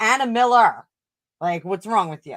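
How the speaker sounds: put-on Boston-area accent, half New York. Showing how speaking with Massachusetts clients sounds: Massachusetts accent. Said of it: "It's not quite New York. It's not quite Anna Miller. It's somewhere in between".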